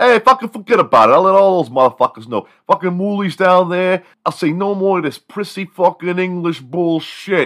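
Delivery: put-on very high, loud Brooklyn accent. Asked to spread word in South New York about dropping the accent, Sir Joseph Brooklyn voice. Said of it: "Sir Joseph Brooklyn".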